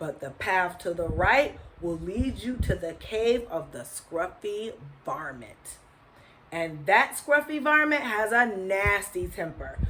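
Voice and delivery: ordinary delivery, nothing marked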